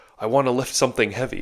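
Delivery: put-on loud, heavy, thick broken-English Russian accent. Retelling what a seven-year-old boy said when he came up: broken, thick Russian accent. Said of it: "broken, thick Russian accent".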